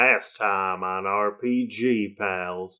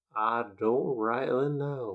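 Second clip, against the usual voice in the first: slow, soft, drawling cowboy voice; 8 dB quieter than usual. In a role-playing game, a character answers a question, in a slow cowboy voice. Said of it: "Does he have a cowboy hat on?".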